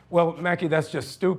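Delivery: ordinary delivery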